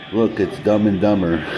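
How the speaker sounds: usual speaking voice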